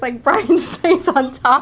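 loud, slow words breaking up with laughter. Speaker trying to describe a man's behavior, laughing while speaking. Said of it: "I'm laughing trying to say this".

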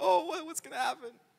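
very high, flustered, frantic panicked voice. Retelling Moses seeing the stick turn into a snake: imitating Moses panicking. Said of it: "He's like panicking".

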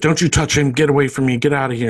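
put-on shouting. Retelling a scene where a mother yells at someone going to Caleb, retelling a mother yelling. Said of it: "The mother yells her out".

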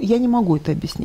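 ordinary talk, nothing marked

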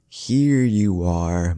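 cooing. Narrator reading a character's line as she jumps onto the bed: cooing. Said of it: "Madatabi cooed".

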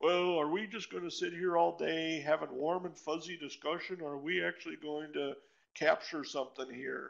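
cranky, impatient, grumpy, curmudgeonly grumbling. Retelling a meeting where someone raised a hand and objected: retelling a grumpy, curmudgeonly remark. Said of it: "somewhat in a grumpy voice, curmudgeonly said".

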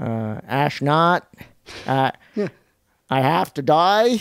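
put-on Boston accent. Correcting how the quote was told, speaker redoes the line: JFK Boston accent. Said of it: "Do it in a Boston accent".

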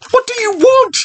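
very high, frightened, fearful cry. Narrator reads the girl being chased around the playground, crying out fearfully. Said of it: "cried Tina fearfully".

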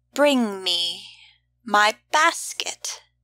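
lazy, slow, drawn-out drawl savouring each word. Narrating a story, reading a woman's line to an old man, drawling. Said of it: "she drawled".

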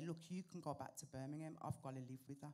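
plain

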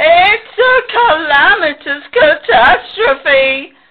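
long, loud, high, drawn-out wailing howl. Pig, after Sheep's shampoo turns out to be sheep dye, reacts: howling. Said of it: "howled Pig".

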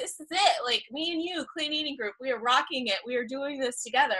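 soft, intimate, encouraging tone.

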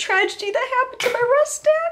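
high, laughing mock-sad whine. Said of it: "I'm so sad".

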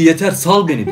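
ordinary talk, nothing marked

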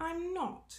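prim and proper, slightly high-pitched voice. A narrator reads Minnie's reply on the first day of school: prim. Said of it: "she says primly".

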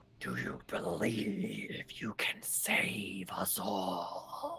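whispered, taunting tone. Narrating a game scene, voicing taunts at the player, whispered taunt. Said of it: "Hear these whispered taunts".

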